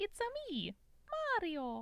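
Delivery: very high, swooping, slow delivery. Doing a self-described not-good Mario impression: Mario impression. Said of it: "The one impression I reliably have is Mario".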